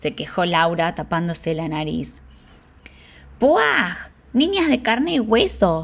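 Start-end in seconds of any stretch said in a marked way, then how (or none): 3.4-5.8 strident, piercing, shrill high voice. Narrator reads an unseen voice answering the girl's complaint, shrill voice. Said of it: "Respondió una estridente voz".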